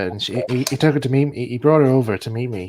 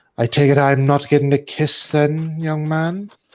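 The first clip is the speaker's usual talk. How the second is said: lofty, superior, haughty, drawn-out prim tone; 3 semitones higher, 4 dB louder than usual. Retelling what a woman said at a birthday: imitating a haughty woman. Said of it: "she just stood there all haughtily".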